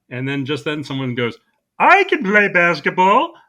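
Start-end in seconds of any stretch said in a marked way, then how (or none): 1.8-3.2 made-up, silly, high, swooping cartoon character voice. Retelling a Looney Tunes scene, someone answers the call for players: made-up cartoon character voice. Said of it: "just a voice I felt like doing".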